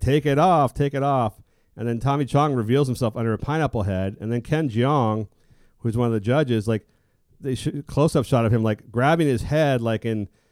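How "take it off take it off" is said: put-on yell, shouted twice. Speaker recounts a reveal on a TV show, imitating someone yelling. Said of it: "he's yelling like".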